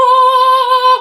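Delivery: high, loud, angelic screaming voice.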